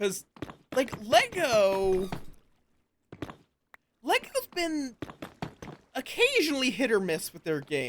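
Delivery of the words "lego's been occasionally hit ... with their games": voice breaking, squeaking very high. Talking about lego games with listeners, voice cracking. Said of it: "such a voice crack there".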